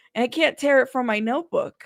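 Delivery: normal talking voice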